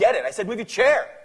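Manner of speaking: very loud, high angry shout. Confronting the other person over the chair, in a raised voice. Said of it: "I need you to stop raising your voice".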